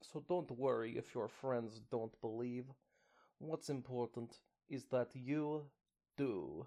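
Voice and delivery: put-on unmistakable, full Russian accent throughout. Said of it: "definitely just Russian and not sexy at all".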